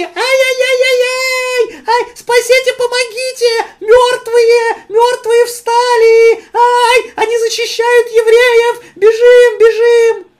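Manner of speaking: very high, shrill, loud, panicked, terrified screaming. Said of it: "завопили".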